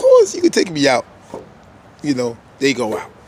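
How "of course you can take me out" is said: very high, giggly schoolgirl voice. Retelling a scene where Charles agrees to a date: imitating giggly Charles like a schoolgirl. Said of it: "a little giggly, like a little schoolgirl going".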